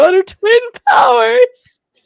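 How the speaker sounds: high, loud, slow, belted-out heroic battle cry.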